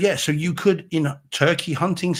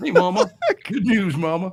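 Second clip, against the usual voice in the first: put-on American accent with swooping pitch; 4 semitones higher than usual. Quoting a line from a scene, in a put-on american accent. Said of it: "you even had the American accent".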